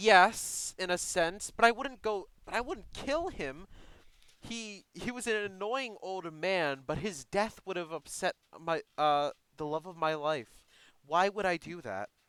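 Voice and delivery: stop-start, faltering, hesitant, halting speech. Voicing a character who answers whether she had enemies: hesitant. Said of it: "She hesitates for a second before saying".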